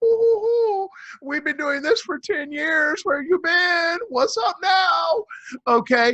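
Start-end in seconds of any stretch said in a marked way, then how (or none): 0.0-5.2 high, loud, smug, gloating told-you-so voice. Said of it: "with smug face on going".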